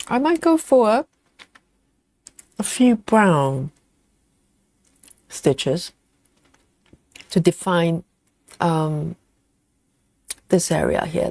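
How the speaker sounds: talking with mouth full of food. Describing which stitches to add next, talking with mouth full. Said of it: "I'm talking with chocolate in my mouth".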